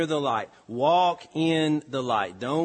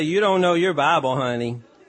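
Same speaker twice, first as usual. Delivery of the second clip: put-on little girl's southern drawl; 5 dB louder than usual. Retelling what a little girl said to one of the boys, in a little girl's southern drawl. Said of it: "in her little southern drawl".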